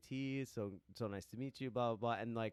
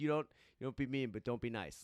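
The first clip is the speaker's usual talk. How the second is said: put-on New York accent.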